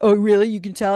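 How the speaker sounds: smug, loud, self-satisfied delivery. Retelling a scene where Dean answers Sam: smug Dean impression. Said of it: "He's getting that smug face on".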